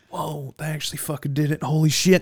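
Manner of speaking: put-on high, thrilled, excited disbelief. Recounting reacting to a game announcement afterwards, retelling past excitement. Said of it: "we were both excited".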